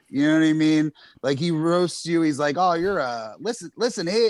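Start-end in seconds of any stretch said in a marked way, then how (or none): 2.5-4.3 put-on old-time nineteen-thirties radio announcer patter. Mocking how a politician insults people: Joe Biden as thirties radio announcer. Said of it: "he's like a fucking thirties radio announcer".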